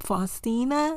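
Faustina with an unsure rising pitch, like a question. Unsure how to pronounce a name, rising pitch on faustina. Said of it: "you know how when people are unsure and their voice goes up".

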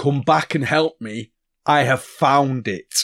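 hurting giant voice. Calling back to a woman who ran away, to deceive her, in Dweezil's pained giant voice. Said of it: "I'm going to do it in in a kind of pained voice".

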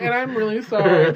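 mock, sorry-sounding apologetic tone. Mimicking the other speaker's apology: mock YouTube apology video tone. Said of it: "gave YouTube apology videos vibes".

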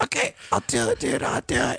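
very deep, low-pitched, dropped voice. Retelling what was heard on arriving, imitating how Willie sounded. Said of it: "I heard Willie sound like this".

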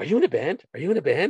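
high, earnest, heartfelt, genuinely sincere acted tone. Quoting a movie line that got the speaker laughing, imitating someone so genuine. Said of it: "it was just so genuine".

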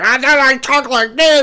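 high, loud, furious freak-out yell. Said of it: "He gets mad".

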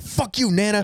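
high, heated blurt. Retelling a comedian's Monopoly bit, flipping the table: imitating Dane Cook's Monopoly bit. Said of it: "acts like he's throwing up the table".

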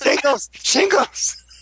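small, high, mild screamed outburst. Laughing with the others, screaming a word: screaming. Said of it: "I just screamed".

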